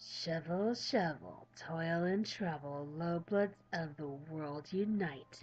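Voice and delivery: muttering. Narrator reads a voice heard in the fog, muttering to itself. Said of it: "a voice muttering to itself in the fog".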